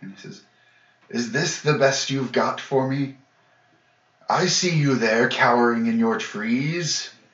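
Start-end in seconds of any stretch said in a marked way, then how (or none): 1.1-7.1 loud, carrying shout. Voicing a foe taunting those cowering in the trees: yelling. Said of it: "He starts yelling again".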